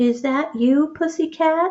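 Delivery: drowsy, sleepy, slightly high voice. Narrator reads Grandma answering the child's whisper, sleepy voice. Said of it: "she answered in a sleepy voice".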